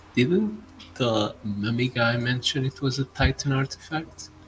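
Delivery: soft, voiceless half-whispered aside. Half-whispering to Bladebeard about the mummy guy, half-whispering in character. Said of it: "whisper to him".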